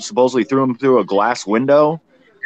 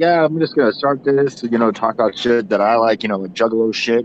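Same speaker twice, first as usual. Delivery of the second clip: ordinary talk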